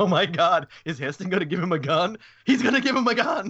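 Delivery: mock-amused, high voice, speaking through laughter. Retelling watching the remake in the theater, imitating own laughing reaction. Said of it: "I was in the theater laughing, going".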